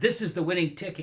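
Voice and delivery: dead-certain tone. Retelling a man slapping the table to claim a win: imitating a statement said with conviction. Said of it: "he said it with such conviction".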